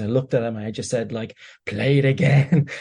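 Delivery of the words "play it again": put-on gruff old geezer voice. Retelling own words to their father: voice of a 65-year-old cigar-chomping lad at the bookies. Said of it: "my voice metamorphosed into that of, like, a sixty-five-year-old cigar-chomping".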